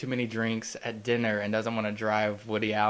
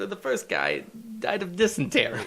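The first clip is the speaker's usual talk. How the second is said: put-on New York actor voice, higher pitched; 8 semitones higher than usual. Joining in with an impression of a watch speech: Christopher Walken impression. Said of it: "You got a pretty good one".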